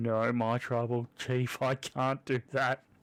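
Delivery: acted-out tearful voice, choking up and breaking. Retelling a wrestling storyline scene, imitating Paul Heyman crying. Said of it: "Paul's sort of breaking up, crying, going".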